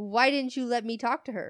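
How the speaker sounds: ordinary talk, nothing marked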